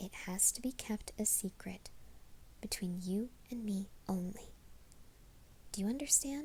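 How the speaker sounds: stern, secretive, soft whisper.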